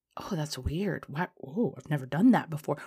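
ordinary talk

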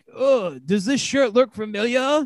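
put-on French accent. Retelling a wrestler introducing himself to another wrestler: french accent. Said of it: "He had a French accent".

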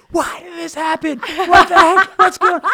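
loud screaming.

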